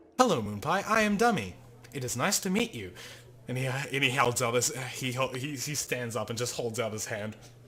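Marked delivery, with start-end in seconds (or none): 0.2-2.9 robotic voice, much higher. The wooden stick introduces himself after being greeted, in Dummy's robotic voice. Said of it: "he sits up like very robotically and is like".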